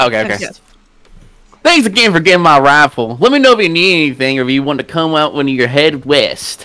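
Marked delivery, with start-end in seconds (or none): 1.6-6.6 heavy put-on Texan accent. A voice actor performs a character's line on request, in Edna's stereotyped Texan accent. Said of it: "That is the most stereotyped Texan I ever heard".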